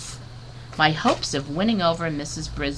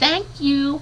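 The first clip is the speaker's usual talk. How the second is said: very high, tiny, squeaky little voice; 11 semitones higher, 3 dB louder than usual. Narrator, given the best-costume ribbon as classmates cheer, says thanks in a squeaky voice. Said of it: "I squeaked".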